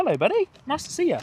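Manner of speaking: put-on high cooing baby talk.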